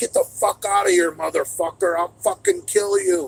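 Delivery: barking voice, wide pitch swings. Telling how a bear just stood staring at them, retelling yelling at a bear. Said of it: "So I start yelling at him".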